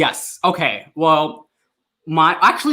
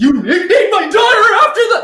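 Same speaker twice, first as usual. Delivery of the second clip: very high, loud, badly done put-on voice; 6 dB louder than usual. Asked to do an impression, the speaker attempts a Bella impression. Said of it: "Can you do an impression of um, Bella saying".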